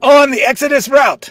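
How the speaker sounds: very high-pitched, loud yelled shout. Shouting the response line from behind the reader, as asked: shouting. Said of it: "And you're gonna shout".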